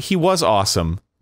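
the word "was" stressed. Saying someone was awesome in Game of Thrones: stress on was. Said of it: "Emphasis on was".

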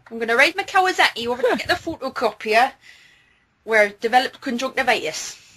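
Newcastle Geordie accent. Showing the trick words that get them into the accent, in a geordie accent. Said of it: "the Newcastle or the Geordie accent".

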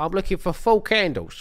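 put-on Cockney accent. Suggesting how someone should have asked for candles, put-on cockney accent. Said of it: "you should have gone in with a Cockney accent".

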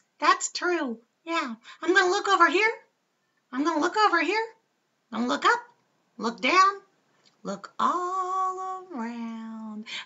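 goofy, high hand-puppet voice, all drawn out. Showing how a hand puppet can talk, the speaker uses a high, silly puppet voice. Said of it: "I have kind of a high, silly voice".

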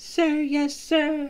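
very high, hushed, toned-down voice. A private, told his answer is still too loud, repeats it quieter.

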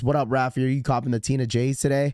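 ordinary talk

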